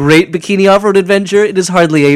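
haughty, snooty film-critic voice. Imagining a film reviewer's line: imitating a snooty reviewer. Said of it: "some snooty reviewer could have said".

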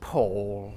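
disappointed, let-down tone. Pitching a post Bake Off scandal bit: a really disappointed 'Paul'. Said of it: "in a really disappointed voice".

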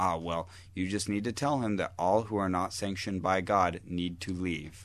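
normal talking voice

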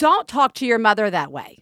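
mock-firm put-on voice. Recalling Stefan scolding Ellis during an argument: imitating Stefan's firm voice. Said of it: "like in this firm voice".

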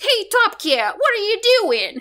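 very high, swooping, bouncing cartoon cat voice. Describing Top Cat's sidekick in the American version, in a Benny the Ball impression. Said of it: "He kind of sounds like".

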